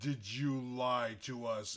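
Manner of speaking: stern, intimidating, commanding tone. Playing a game character confronting someone, in a loud booming voice. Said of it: "in a loud, booming voice".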